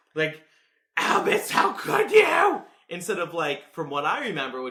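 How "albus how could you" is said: very high, very loud, drawn-out screamy cry. Imitating Scorpius from the show yelling at Albus: imitating Scorpius screaming. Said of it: "He is very screamy".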